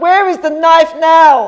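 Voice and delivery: very loud, high-pitched shout. Speaker recounts officers bursting through the door at them, retelling police shouting. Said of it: "they were shouting".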